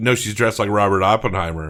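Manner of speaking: plain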